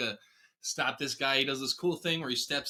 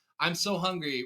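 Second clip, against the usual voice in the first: put-on childlike voice, higher pitch; 3 semitones higher than usual. Quoting a hungry giant monster from a show: inner child voice. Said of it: "that's his inner child voice going on".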